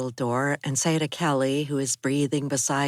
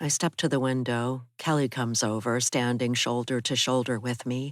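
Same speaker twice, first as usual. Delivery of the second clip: usual speaking voice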